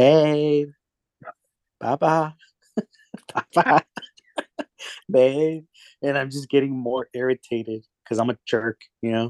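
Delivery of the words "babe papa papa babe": put-on very slow, high, sweet little-girl voice. A father retells hearing his little girl call from the living room, imitating her sweet little voice. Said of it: "I hear this sweet little voice like".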